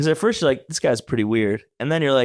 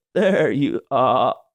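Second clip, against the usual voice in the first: stammering, halting, broken-up, stuttery delivery. Retelling how a man he had never met greeted him, imitating halting stuttery speech. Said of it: "He talks like this. He goes like".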